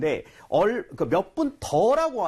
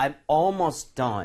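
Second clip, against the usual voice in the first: very slow, careful delivery. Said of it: "아니라".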